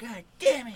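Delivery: very high, very loud, shrill cartoon outburst. Told there is no sody pop, react with an Eric Cartman impression. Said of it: "Is that your Eric Cartman impression?".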